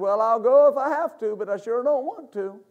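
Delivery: whiny, pitiful, whimpering reluctant voice. Acting out a demon answering someone who resists it, mock whimpering. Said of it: "He falls down on the ground and whimpers and says".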